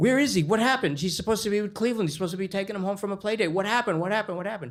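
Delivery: mock frantic mother voice, high, rushed, panicked. Retelling a mother's reaction to a police call about her son, imitating her freaking out. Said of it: "At which point she freaks".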